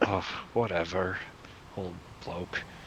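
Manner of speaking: muttering under breath. Speaking in character after being ignored and turned away from: muttering under breath. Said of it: "I just kinda mutter under my breath".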